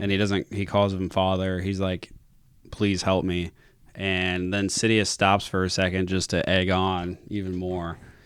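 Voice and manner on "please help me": put-on begging voice. Retelling a film scene where Luke begs his father: imitating Luke begging. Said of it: "Luke is begging his dad to help him".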